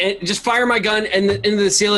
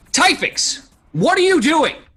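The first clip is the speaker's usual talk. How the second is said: pitched-up shouted call in a put-on voice; 9 semitones higher than usual. Running into a room with a pistol ready, yelling in character. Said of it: "and just yell".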